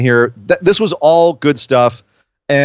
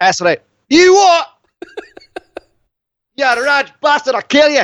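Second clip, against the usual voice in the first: put-on Glaswegian accent, very high pitched; 12 semitones higher than usual. Acting out Nikki answering Bailey, in Nikki's Glaswegian accent. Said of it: "You can't understand a Glaswegian accent".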